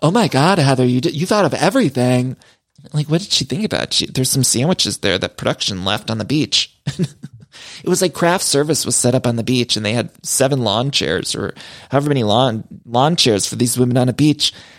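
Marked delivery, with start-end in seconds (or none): 0.0-2.4 mock, sarcastic, fake-gushing tone. Speaker retells a woman praising heather for the beach setup, mock gushing praise. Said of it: "acting like Heather just organized this".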